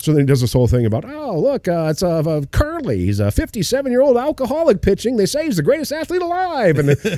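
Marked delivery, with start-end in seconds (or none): 1.0-6.8 put-on old-timey radio baseball announcer voice, somewhat higher. Retelling a comedy bit about an old radio call: imitating Shane Gillis's announcer bit. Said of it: "a live radio call from Jackie Robinson's first game".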